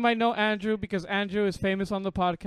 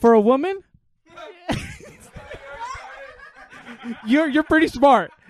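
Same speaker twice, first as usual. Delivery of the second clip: loud sarcasm delivered with laughter. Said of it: "I'm being sarcastic".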